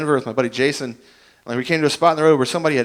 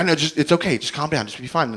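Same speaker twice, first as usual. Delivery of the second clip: mock panicked, reassuring tone; 4 dB quieter than usual. Retelling a phone call about a rash, imitating someone freaked out. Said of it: "she was so freaked out".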